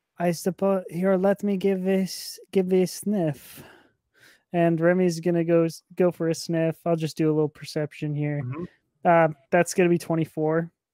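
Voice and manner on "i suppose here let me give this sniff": a bit quieter and slower. Playing a character pausing to give something a sniff, a bit quieter. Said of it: "is going to kind of quiet down a touch".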